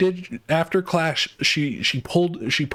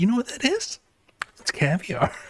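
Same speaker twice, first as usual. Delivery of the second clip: very giddy, swooping sing-song; 3 semitones higher than usual. Retelling what a woman said about caviar, imitating a giddy voice. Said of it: "she said it like so giddily".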